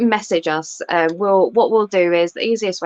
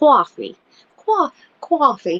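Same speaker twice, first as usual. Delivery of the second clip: coffee said in a put-on New York accent; 7 semitones higher than usual. Group trying out ways to say 'coffee': new york accent on 'coffee'. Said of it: "That's New York, isn't it?".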